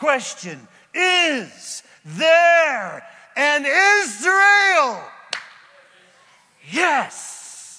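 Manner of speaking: very loud, very high, slow, drawn-out yell. Speaker addressing skeptics in a talk, shouting. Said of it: "Sorry for the yelling and the shouting".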